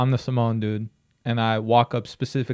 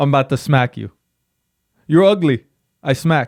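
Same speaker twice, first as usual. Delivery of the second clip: loud, clumsy, put-on Hawaiian accent; 3 semitones higher, 6 dB louder than usual. Playing a huge-handed man threatening the listener in a made-up scenario: attempted hawaiian accent. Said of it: "I don't know Hawaiian accents, but play along".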